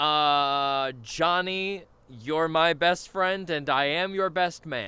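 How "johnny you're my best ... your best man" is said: put-on earnest, sincere, slow, heartfelt delivery. Re-enacting the best man speech when asked for a clip: re-enacting a heartfelt speech. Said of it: "Your heartfelt speech? Give us a little clip".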